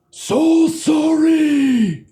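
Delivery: distant, high voice echoing far away. As game narrator, voicing Balavan calling through the halls: distant echoing Balavan voice. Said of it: "Balavan's voice just kind of echoes through the halls".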